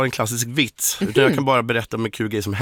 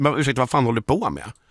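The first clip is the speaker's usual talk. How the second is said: normal talking voice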